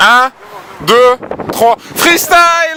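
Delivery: hyped, excited counting shout.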